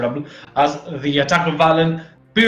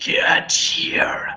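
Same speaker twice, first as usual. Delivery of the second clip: breathy, whispered monster voice. Game narrator voicing a creature just hit by a fireball, in a creature whisper. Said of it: "the creature whispers".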